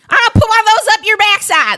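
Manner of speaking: imitation Southern belle accent. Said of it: "I do a very good Southern".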